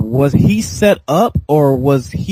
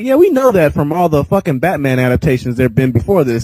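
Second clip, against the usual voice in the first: usual speaking voice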